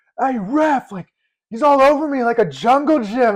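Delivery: loud, high-pitched, screaming shout. Recalling a striker yelling to the ref about a defender, retelling a scream. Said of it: "he just screams out loud".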